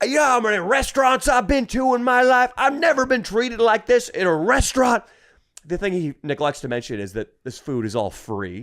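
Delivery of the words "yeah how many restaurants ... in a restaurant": put-on very high-pitched, loud drunken ranting voice. Retelling what a drunk man said after being told off: imitating a drunk man. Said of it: "The drunk guy goes".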